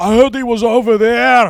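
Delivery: put-on high, loud, booming, slow Scottish accent. Acting out a Scottish voice answering the cops: Shrek voice. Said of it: "they hear a Scottish guy".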